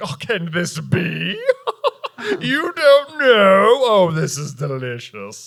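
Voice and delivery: very drawn-out, swooping, sing-song savoring gloat. Retelling a scene where Lucius gloats at Harry: acting out Lucius Malfoy, gloating. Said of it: "Lucius is doing the most Draco thing ever".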